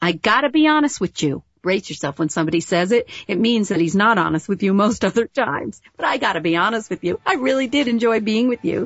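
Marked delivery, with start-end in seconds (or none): 0.0-1.4 put-on pitched-up Long Island accent. On a radio show, quoting what a guy said to you, in a Long Island accent. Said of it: "with a Long Island accent".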